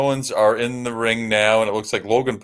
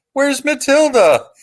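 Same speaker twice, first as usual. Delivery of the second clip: put-on very high, squeaky little kid voice, yelling; 6 dB louder than usual. Retell a kid calling to Davey as the Bulldogs walk in, imitating a squeaky little kid yelling. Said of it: "some little kid with a squeaky little voice yells".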